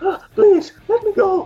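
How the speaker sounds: put-on panting, out of breath. Recalling a man speaking english in a scene, act out his panting, out-of-breath speech. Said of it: "O cara todo ofegante falando".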